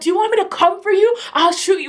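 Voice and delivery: high-pitched, furious and menacing voice. Retelling threats shouted at a man during a fight: retelling angry threats. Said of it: "I even remember saying like".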